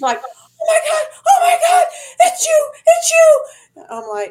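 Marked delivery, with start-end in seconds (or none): 0.2-3.9 shrieking, very high and very loud. Retelling a stranger recognizing the speaker in a casino: imitating a shriek. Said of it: "I hear this shriek".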